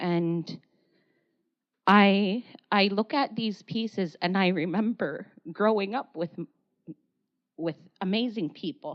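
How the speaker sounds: tearful, crying through the words. Looking at pieces from all over Nunavut, remembering people, crying while speaking. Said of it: "Sorry, I cry all the time".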